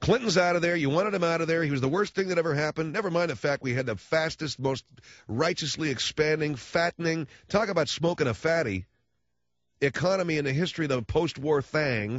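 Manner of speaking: high-pitched, angry ranting delivery. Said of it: "I realize I'm sounding angry".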